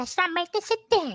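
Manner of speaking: put-on high, childlike puppet voice. Showing friends how he talks after announcing your impression, do an Elmo impression. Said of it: "here goes my impression".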